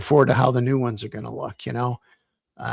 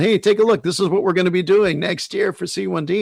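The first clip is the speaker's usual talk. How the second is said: mock chuckling through the words, pitched up, joking; 6 semitones higher than usual. Retelling a joke made about a calendar in the garage: imitating someone laughing while talking. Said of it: "And he's laughing".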